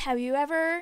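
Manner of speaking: usual speaking voice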